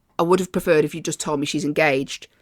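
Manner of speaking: ordinary talk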